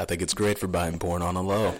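mock deadpan, straight-faced tone. Repeating a co-host's line back to them: imitating a deadpan delivery. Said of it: "You said that with such a straight face".

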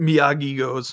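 usual speaking voice

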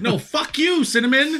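furious outburst, very high pitched. Finishing an analogy about a snack: angry. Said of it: "I don't know why this is making me so angry".

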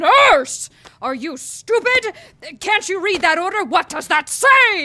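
shouting. Posing as a doctor in a busy hallway, a character berates the nurse: yelling at the nurse. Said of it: "I wish you'd stop yelling at me".

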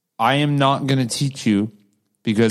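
plain

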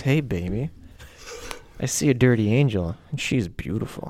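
sultry, seductive, soft murmuring delivery. Showing listeners how to deliver a line to their partner: seductive voice. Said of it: "you can say this with a seductive voice".

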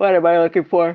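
speaking through a yawn. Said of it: "Sorry, I'm yawning again".

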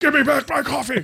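very high, shrill, insistent yell. Imagining a captain yelling at a crewman: Mel Gibson yelling. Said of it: "he would yell a lot".

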